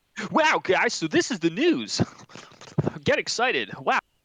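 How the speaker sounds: over-excited, loud, swooping pumped-up voice. Joking about making over-the-top videos, the speaker starts imitating an overly excited YouTuber. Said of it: "Like a really overly excited".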